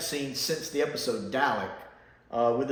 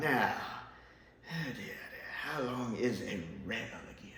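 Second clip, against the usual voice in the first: absent-minded, distracted, puzzled musing aloud; 3 semitones lower, 9 dB quieter than usual. Imagining a line in an actor's voice: Patrick Troughton voice. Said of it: "Or Patrick Troughton".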